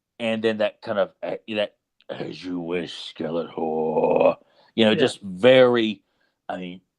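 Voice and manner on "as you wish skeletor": deep, low, very slow growl. Quoting a henchman answering Skeletor: growling Beastman voice. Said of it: "that constant growl when he's talking".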